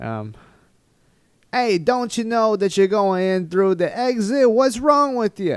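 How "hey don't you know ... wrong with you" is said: loud, very high put-on New York accent. Retelling what someone said to them at an exit, imitating a New York accent. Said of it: "It's more New York".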